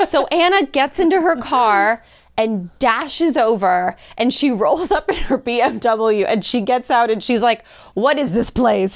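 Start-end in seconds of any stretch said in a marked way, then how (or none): 7.9-9.0 put-on Russian accent. Retelling how a new friend arrived and spoke, imitating Anna's Russian accent. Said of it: "she has this like beautiful Russian accent".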